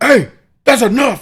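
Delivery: very loud, high-pitched yelling. Retelling how he yelled at his screaming child, in a big loud dad voice. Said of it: "I did like the big loud dad voice".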